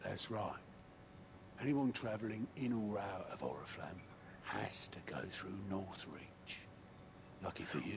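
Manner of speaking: hushed whisper. A character speaks to the others in the scene, whispering. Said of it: "Why are we whispering?".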